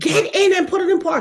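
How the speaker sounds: play-acted, very high-pitched scream. Recounting pushing a car uphill, telling a woman to park it: retelling a scream. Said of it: "I had to scream".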